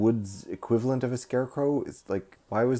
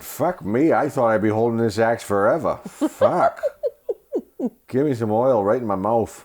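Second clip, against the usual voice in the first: put-on loud, swooping, thick Boston accent; 7 dB louder than usual. Discussing Jack Haley's thick accent, doing a Jack Haley Boston accent impression. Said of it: "That's not what he sounds like".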